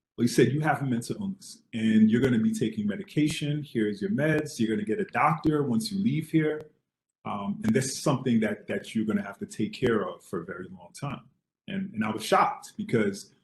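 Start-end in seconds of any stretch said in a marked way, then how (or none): none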